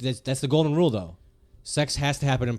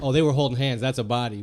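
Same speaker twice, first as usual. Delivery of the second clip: ordinary delivery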